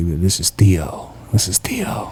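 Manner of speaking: whispered, breathy, exaggerated deep radio-style voice. Recalling a man who had a really deep voice, in Theo's deep voice. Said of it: "he had a really deep voice".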